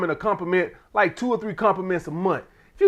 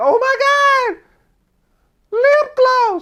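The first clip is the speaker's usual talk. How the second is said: fake gushing excitement, very high, very slow, drawn out; 6 dB louder than usual. Imitating a woman acting excited over a cheap lip gloss: imitating fake excitement. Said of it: "acting like".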